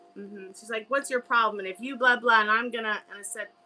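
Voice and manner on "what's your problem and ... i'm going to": mock angry barking. Retelling a security guard's outburst: imitating someone barking angrily. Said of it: "barking at me".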